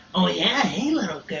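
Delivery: creepy, sleazy creep voice. Showing how a line sounds in a creepy creeper voice. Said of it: "use that voice".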